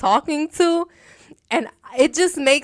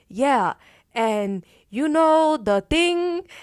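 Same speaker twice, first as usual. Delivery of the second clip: very slow, drawn-out talk, word by word; 3 semitones higher than usual. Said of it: "Les would talk very slow".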